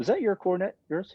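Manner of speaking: high, no-nonsense put-on sternness. Retelling how a man walked up to a stranger, retelling a serious question. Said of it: "He's all serious".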